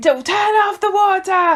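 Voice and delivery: put-on screaming. Retelling a dad screaming during a leak: imitating dad screaming. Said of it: "my dad starts screaming at me".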